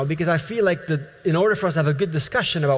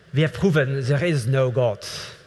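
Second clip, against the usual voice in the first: put-on German-accented scientist voice; 3 semitones lower than usual. Speaker imagines a scientist announcing on television, in a german accent. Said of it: "say in a German accent".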